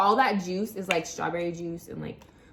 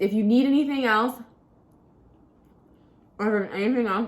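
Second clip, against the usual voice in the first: stuttering, stumbling over words while eating; 4 dB louder than usual. Wrapping up a short tutorial for viewers, stuttering while eating. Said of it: "I can't even speak from my freaking sugar".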